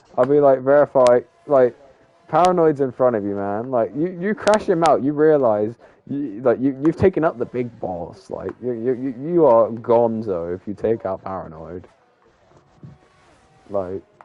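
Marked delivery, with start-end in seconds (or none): none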